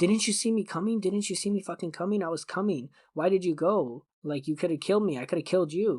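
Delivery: put-on man's heated, indignant yelling outburst. Retelling a near crash, the truck driver yelling at her: imitating a man yelling. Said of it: "he starts yelling at her".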